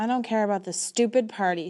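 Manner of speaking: snapping. Narrator reads a girl's reply when urged about a party; snapping. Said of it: "she snaps".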